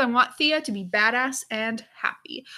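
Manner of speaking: normal talking voice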